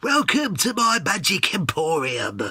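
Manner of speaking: slow delivery with every word stretched out. The speaker recalls a favourite video game character voice: Fable 3 merchant voice. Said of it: "the voice of the merchant at the start".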